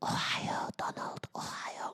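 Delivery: soft, breathy, sweet whisper. Acting out a whisper in the ear: imitating Melania whispering. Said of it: "she'll just whisper".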